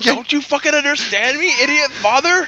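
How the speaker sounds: mock very high, frustrated, fed-up toddler voice. Voicing how he gets pissed off at his father for not understanding: mock-frustrated outburst. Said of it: "he probably gets frustrated".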